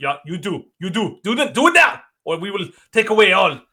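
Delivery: put-on Chinese accent. Speaker acting out China making demands of Canada, put-on Chinese accent. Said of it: "What accent are you doing?".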